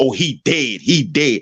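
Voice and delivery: slow, sneering, derogatory tone. Retelling what others keep saying about a man who died, imitating a derogatory tone. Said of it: "he's saying it in such a derogatory way".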